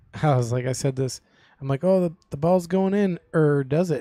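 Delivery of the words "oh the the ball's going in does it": put-on Wisconsin accent with local speech. Retelling own past words said in Wisconsinese: Wisconsin accent. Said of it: "doing some Wisconsinese in here".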